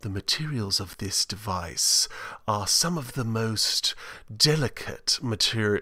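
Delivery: put-on soft, breathy delivery in a British accent. Imitating a designer from Apple events describing device materials: Jony Ive British accent. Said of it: "heard Johnny Ives' uh, British accent".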